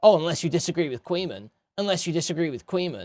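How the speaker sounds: snide, snarky, sarcastic put-on voice. Streamer retelling what Onobox said to a chatter, mock-snarky. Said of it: "He's saying a snarky voice".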